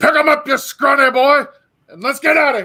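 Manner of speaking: very high-pitched in-character yell. Voicing a character calling to an ally to carry someone out: in-character yell. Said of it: "yells at Inglis".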